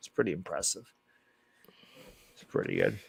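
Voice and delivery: whispered, hushed, sarcastic praising tone. Watching a football game, commenting on a quarterback's numbers, sarcastic praise. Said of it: "I'm pretty sure it's quite sarcastic".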